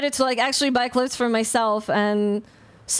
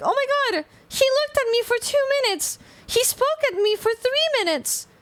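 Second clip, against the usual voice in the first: very high, obsessive, overthinking fussing chatter; 13 semitones higher than usual. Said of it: "I have to hear her daily being like".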